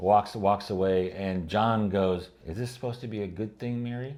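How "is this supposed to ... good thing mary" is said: snide, condescending, jerky tone. Retelling a character's line from an episode: imitating a jerky, snide tone. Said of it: "he said it in a jerky way".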